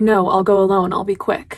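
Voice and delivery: ordinary talk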